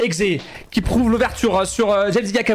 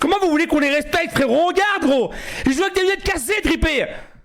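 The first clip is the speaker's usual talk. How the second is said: full-on shrill shouting rant; 8 semitones higher than usual. Commentating a match his side is losing to Kosovars, daughter listening: shouting loudly. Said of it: "pourquoi tu cries fort?".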